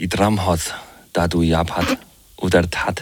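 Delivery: very slow, fake invented elvish speech. Try out for the others how the lead-in to the news sounds in elvish language. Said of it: "på elversprog".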